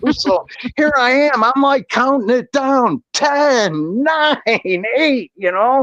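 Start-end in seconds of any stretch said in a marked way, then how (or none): 0.8-5.3 put-on giddy, excited counting, "ten" drawn out. Recounting watching a microwave timer, reenacting an excited countdown. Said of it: "And I'm super excited".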